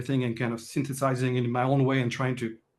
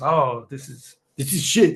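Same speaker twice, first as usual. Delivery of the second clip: fake French accent, much louder; 5 dB louder than usual. Retelling how someone he respected judged his script, in a put-on French accent. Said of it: "French accent".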